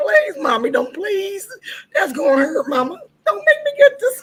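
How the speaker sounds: mock sobbing, very high-pitched, pleading and crying. Recalling begging their mom as a child; imitating crying and begging. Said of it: "I was crying".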